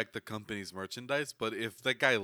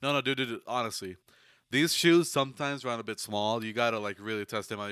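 normal talking voice

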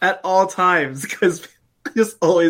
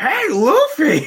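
high put-on cartoon voice, pitched way up; 10 semitones higher than usual. Speakers trading One Piece impressions, doing a favorite: Usopp voice. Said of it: "My favorite was on Usopp because it was like".

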